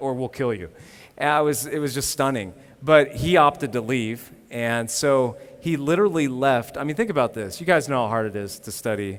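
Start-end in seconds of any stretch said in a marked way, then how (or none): 0.0-0.7 plain, offhand, businesslike, matter-of-fact delivery. Retelling a student's words about being threatened: imitating matter-of-fact delivery. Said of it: "he just said it so matter-of-factly".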